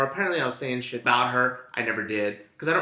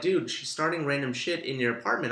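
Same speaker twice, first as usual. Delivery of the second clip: ordinary talk, nothing marked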